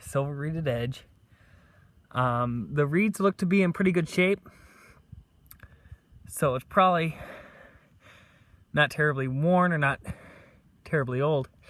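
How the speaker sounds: out of breath. After running back to camp to show a silver coin, out of breath. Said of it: "Forgive me being out of breath".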